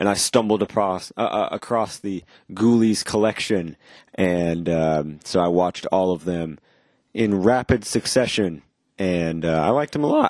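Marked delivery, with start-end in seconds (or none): 9.0-10.3 voice cracking, slower pace. Speaker recalling binge-watching the Ghoulies films; voice cracking. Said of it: "I don't know why my voice cracked there".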